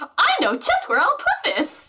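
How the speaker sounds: high-pitched, swooping, feigned astonishment. Playing a character handed large cardboard boxes: acting surprised.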